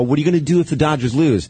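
ordinary talk, nothing marked

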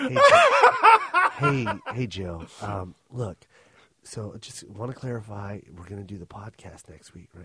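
mock whispering voice. Retelling a phone call from a plane: imitating Mike whispering. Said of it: "whispering, 'cause there's people sitting next to him".

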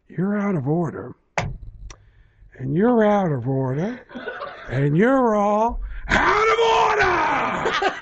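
put-on slow, rising yell.

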